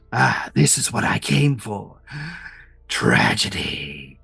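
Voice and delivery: soft, hissing laughter through the words. Doctor Haunt sits on the vehicle roof throwing popcorn as tragedy unfolds; Doctor Haunt, hissing with laughter. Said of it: "a voice hissing with laughter".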